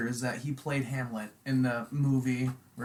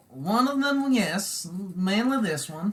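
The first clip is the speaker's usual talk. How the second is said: heavy, raised, put-on Eastern European accent; 7 semitones higher, 5 dB louder than usual. Asked about switching accents on the mic, answering in a fake Borat accent. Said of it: "that's like the guy from Borat".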